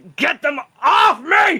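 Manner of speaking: very high, very loud, very slow, drawn-out creature shriek. Voicing the Wendigo as it swipes at attached guardians: Wendigo voice. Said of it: "He's like".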